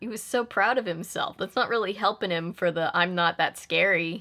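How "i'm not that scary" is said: plain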